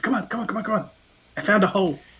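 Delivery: high, tiny, plaintive stage whisper. Voicing a character urging friends toward a hole: tiny plaintive half-whisper. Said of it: "whisper this tiny little, like, plaintive".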